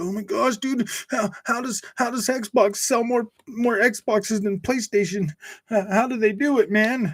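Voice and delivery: high, whiny, sarcastic, put-upon upset tone. Mocking a chatter upset that Xbox outsold PlayStation: mocking an upset chatter. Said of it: "You're just like".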